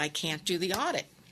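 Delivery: ordinary talk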